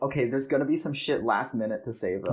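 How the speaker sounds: ordinary talk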